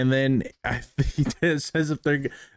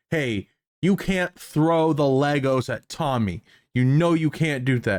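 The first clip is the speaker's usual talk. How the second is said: mock scolding tone, as to a small child. Acting out the cop talking to him: imitating scolding a five-year-old. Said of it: "talked to like a five-year-old".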